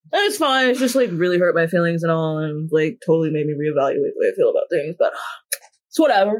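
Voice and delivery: oddly done, weird, bro-ish put-on jock voice. In an acted scene, replying to someone who says they were hurt: weird jock voice. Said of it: "I gave you like a whole like weird jock voice".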